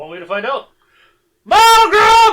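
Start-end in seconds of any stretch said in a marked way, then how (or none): 1.5-2.3 very loud, high-pitched yell at full volume. Asked whether yelling for them is a bad idea, a player tries, yelling a name. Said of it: "Do you think yelling for them is".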